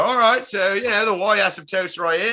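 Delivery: poor, bad put-on British accent. Retelling teaching a class to visiting observers: bad british accent. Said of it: "I don't even do good accents".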